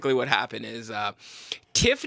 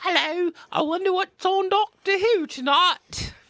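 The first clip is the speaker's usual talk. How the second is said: very high, drawn-out, slow put-on British accent; 4 dB louder than usual. Showing how british people talk: imitation british accent. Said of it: "British people talk like this".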